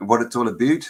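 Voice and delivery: attempted, put-on Canadian accent. Speaker urging listeners to sign up, in a put-on canadian accent. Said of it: "That's my best Canadian".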